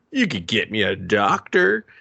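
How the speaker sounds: dry, sarcastic delivery with swooping pitch. Retelling Finch's line from the film: imitating Finch being sarcastic. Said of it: "Let me get a little bit of sarcasm here".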